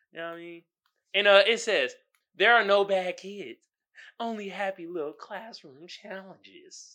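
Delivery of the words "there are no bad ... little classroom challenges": soft, hushed voice of a TV painting host. Reading a line as the painting teacher: Bob Ross voice. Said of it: "Did I sound like Bob Ross?".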